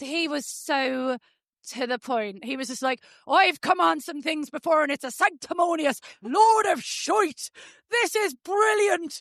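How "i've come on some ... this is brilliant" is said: put-on blunt, straight-talking Irish accent, pitched up. Telling others how to the point he was, imitate Austin O'Connor in an Irish accent. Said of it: "Quite proud of my Irish accent".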